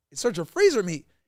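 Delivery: acted, stunned, shocked, disbelieving tone. Retelling a lawyer's question on cross-examination: imitating a shocked lawyer.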